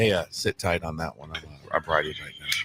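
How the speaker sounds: hushed, very low half-whisper. Recounting how he answered and what he said, retelling a half-whisper. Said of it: "He said it just like that".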